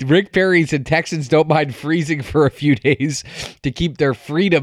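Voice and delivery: speech broken up by laughing through the words. Quoting a politician's remark to the audience, laughing while speaking. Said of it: "I can't even say this without laughing".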